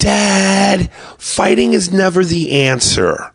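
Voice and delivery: Dad drawn out, very high and very slow. Imitating a son rejecting a fight: drawn-out "Dad". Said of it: "says it as though he spelt it D, fifteen A's and D".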